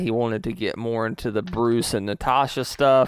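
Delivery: plain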